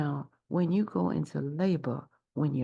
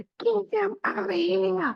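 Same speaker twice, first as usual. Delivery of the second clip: put-on, very high-pitched, shrill full-lung scream; 4 dB louder than usual. Acting out a woman in labor during a contraction: screaming at top of lungs. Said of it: "you scream to the top of your lungs".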